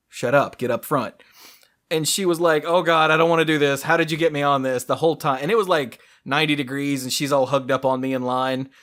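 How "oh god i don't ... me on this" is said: put-on nervous, reluctant, pleading childlike voice. Retelling what a nervous kid said before a ride, imitating a nervous kid. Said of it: "she's nervous".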